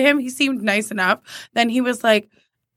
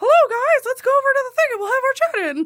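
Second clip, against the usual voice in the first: squeaked, way up high. Describing a former manager whose voice sounded like this, Mickey Mouse voice. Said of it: "So he sounded like Mickey Mouse".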